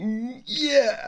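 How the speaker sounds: put-on tiny boy's voice, very high. Retelling how a baby boy reacts to music: imitating a little boy's voice. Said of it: "in his little boy voice".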